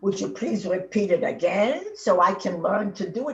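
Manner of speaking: ordinary talk, nothing marked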